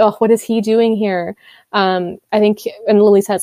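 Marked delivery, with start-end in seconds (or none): none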